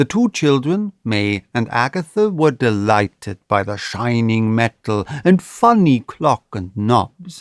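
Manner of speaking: plain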